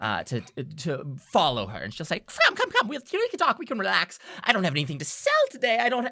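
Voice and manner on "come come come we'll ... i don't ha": put-on high, raised little old-woman character voice. Voicing an old woman inviting visitors to her couch: old woman voice. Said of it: "gestures with her little curled up fingers".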